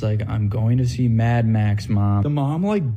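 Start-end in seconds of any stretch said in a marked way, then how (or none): 0.3-2.2 put-on weary, sighing voice. Retelling a phone call, quoting the son: imitating a sighing reply. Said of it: "He kinda sighs".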